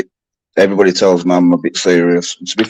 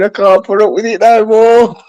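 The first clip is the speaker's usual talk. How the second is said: mock woman screaming, pitched high; 14 semitones higher, 4 dB louder than usual. Speaker quotes a woman screaming at a man who stays in character, imitating a woman screaming. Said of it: "she's screaming".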